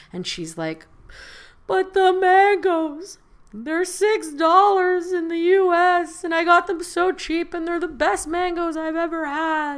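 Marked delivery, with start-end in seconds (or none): 1.6-9.7 mock very high, loud, tearful wailing. Retelling a crying woman bringing cheap mangoes into Canada, imitating a woman crying. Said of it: "She's crying".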